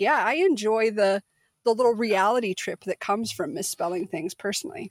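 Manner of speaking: plain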